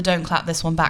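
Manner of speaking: ordinary talk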